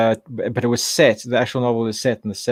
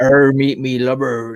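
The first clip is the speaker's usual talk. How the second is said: put-on slow, loud West Country accent; 6 dB louder than usual. Imitating how people speak in the Southwest: imitating a Southwest accent. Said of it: "here it's like".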